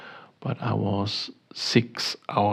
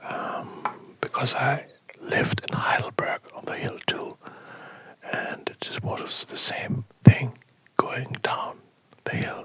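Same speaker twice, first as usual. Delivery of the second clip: hushed whisper, higher pitch; 4 semitones higher than usual. Talking quietly in a hotel room so as not to disturb neighbors: whispering. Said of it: "I will whispering because I don't wanna disturb my neighbors".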